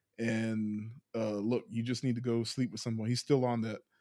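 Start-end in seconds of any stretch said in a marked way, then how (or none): none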